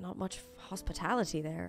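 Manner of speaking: muttered aside. Pim, after being told to take a seat, speaks aside to Dirk: muttered aside. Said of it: "aside to Dirk".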